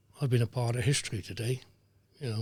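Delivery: ordinary delivery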